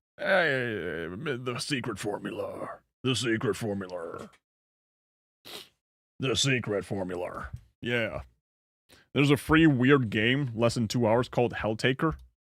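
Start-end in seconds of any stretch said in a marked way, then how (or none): 0.2-7.5 low, slow cartoon voice with drawn-out hey. Answering a chat request for a Plankton impression: Plankton impression. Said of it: "Can you do a Plankton impression?".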